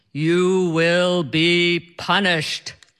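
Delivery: deep, godlike, pronouncing voice. Retelling what a man on a flight said to her, in a deep godlike voice. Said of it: "in this deep, godlike voice".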